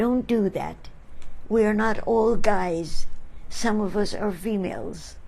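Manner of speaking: ordinary delivery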